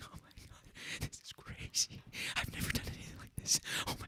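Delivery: very quiet, breathy, thrilled, excited whisper. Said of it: "excited, like, quiet face".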